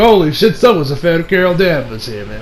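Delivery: normal talking voice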